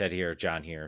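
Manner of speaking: flat, unenthusiastic. Podcast host opening the show and introducing the hosts: flat, unenthusiastic. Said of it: "I should say that with more enthusiasm".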